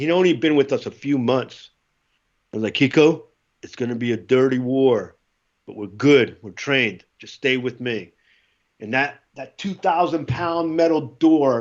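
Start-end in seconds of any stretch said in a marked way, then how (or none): none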